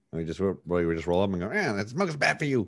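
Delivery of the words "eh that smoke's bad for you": little put-on bat voice, higher, faster. Asked about it, the speaker redoes the little anti-smoking bat voice. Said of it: "you used to have like a little voice for it".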